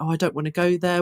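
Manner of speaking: ordinary delivery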